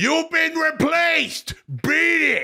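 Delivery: high, slow mock yell. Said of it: "and I yelled out".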